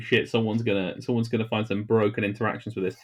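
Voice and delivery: ordinary talk, nothing marked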